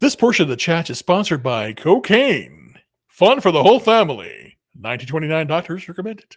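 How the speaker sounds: loud radio commercial pitchman announcer voice. Breaking into a bit during a chat: radio announcer voice. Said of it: "I love that voice. It's like radio".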